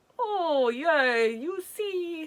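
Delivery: put-on very high, very drawn-out Italian accent. Retelling what the man shoveling manure told their dad: Italian-sounding accent. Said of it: "I sound like I'm from Italy now".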